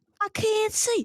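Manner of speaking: loud, very high, shrill shriek. Retelling a brother swinging a pillow in the dark: imitating someone screaming.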